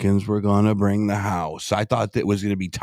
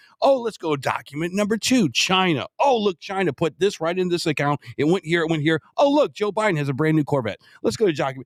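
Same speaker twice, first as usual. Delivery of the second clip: high, fast mock eager presenter voice. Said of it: "They should have been like".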